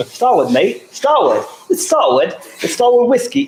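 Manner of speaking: very high, swooping attempted Australian accent. Saying the whiskey brand name live on air, attempted Aussie accent. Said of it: "with an Aussie accent?".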